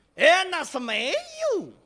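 Shandong dialect pronunciation. Showing how someone from Shandong would say it, Shandong accent. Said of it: "山东人一说，".

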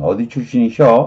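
ordinary delivery

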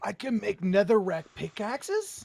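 very loud, thrilled, swooping excited delivery. Finding out that netherrack pickaxes can be made: excited. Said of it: "You sound so excited".

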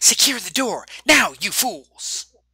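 high, shrill, screeching villain scream. Narrator voicing the Cairo overgoverner as his troops land, high-pitched villain screaming. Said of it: "The high-pitched voice of the Cairo overgoverner and criminal mastermind screaming".

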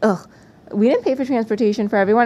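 ordinary talk

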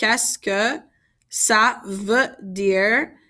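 slowed-down, deliberate, careful French. Repeating a french phrase for learners, a little bit slower. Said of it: "I'm going to say that a little bit slower".

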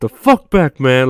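acted-out, irritated, angry yelling. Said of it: "he fucking turns into [name] and shit, telling paparazzi".

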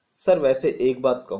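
ordinary talk, nothing marked

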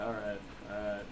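low, soft, defeated sigh.

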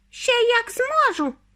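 squeaky little voice, very high pitched. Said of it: "пискнув тоненьким голосочком".

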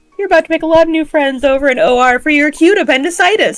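put-on casual, upbeat delivery. Retelling what the OR head told the patient, imitating a casual, upbeat tone. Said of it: "the most casual, like, upbeat way".

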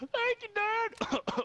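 very high put-on pubescent voice crack. Playing a son thanking his dad: fake voice crack. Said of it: "still going through puberty".

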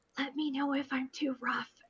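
soft, gentle, careful whisper. Voicing a character carrying a delicate lamp: whispering gently. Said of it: "gently scoops it up with both hands and whispers".

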